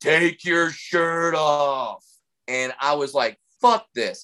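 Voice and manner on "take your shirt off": play-acted lazy, mild, drawn-out, called-out jeering. Recounting what a guy in the front row shouted at a comic, retelling a yell. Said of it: "just yells out".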